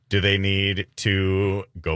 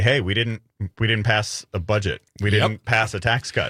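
ordinary delivery

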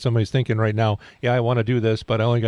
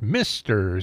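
Mr given marked, heavy emphasis. Morning show host introducing a guest for the home and craft show, emphasis on Mr. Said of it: "with an emphasis on the Mr".

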